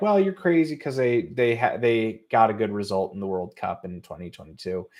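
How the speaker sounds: normal talking voice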